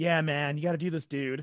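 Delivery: put-on 80s dude voice. Imitating how a movie character kept talking to his dad, 80s dude voice. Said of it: "talked like he was from the 80s".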